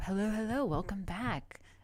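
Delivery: on-air radio presenter voice. Greeting stream viewers on coming back; radio voice. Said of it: "This is my radio voice".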